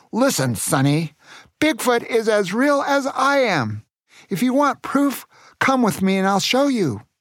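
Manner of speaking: fuming, confrontational, angry shout, pitched high. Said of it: "and shouted".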